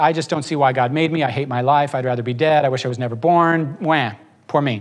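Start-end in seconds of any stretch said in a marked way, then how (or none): none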